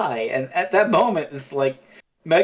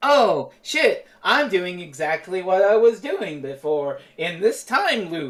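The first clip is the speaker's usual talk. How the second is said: sarcastic, hammy, deliberately fake and wooden line reading; 4 semitones higher than usual. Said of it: "sarcastic acting".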